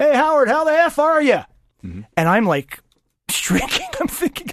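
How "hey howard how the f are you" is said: loud, high, booming shout at full volume. Retell how a player came out of the shower room and greeted you, imitating his very loud shout. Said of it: "as loud as he can possibly say it".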